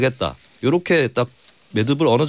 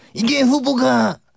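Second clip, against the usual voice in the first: very high, hoarse, rough put-on shout; 13 semitones higher than usual. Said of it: "조원진 전 의원 성대모사입니다".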